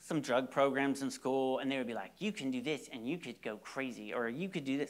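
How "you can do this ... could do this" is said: soft, put-on rural North Carolina country accent. Retelling what a school teacher said in drug programs, put-on country accent. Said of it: "I'm always throwing a country accent on it".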